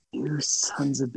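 breathy, exasperated, fed-up half whisper. Retelling how Glenn sounded when players threw a curveball: imitating Glenn's exasperated voice. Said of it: "you could just hear it in Glenn's voice".

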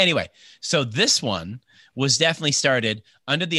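ordinary delivery

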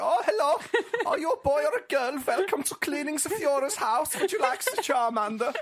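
put-on campy German accent, high and loud. Imagining him introducing the start of a Pokemon game, in a really camp German Joseph Goebbels voice. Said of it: "had a really camp german voice like".

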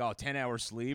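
ordinary talk

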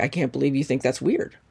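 normal talking voice

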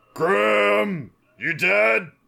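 booming, rough, drawn-out shout. A player casts a spell to call out to a missing companion, booming voice. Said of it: "Booming voice".

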